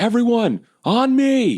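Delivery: very high-pitched, swooping, loud call in a character voice. Calling allies to gather around in the game: calling out in character. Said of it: "I'll just call out and say".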